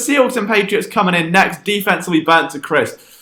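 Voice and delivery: ordinary talk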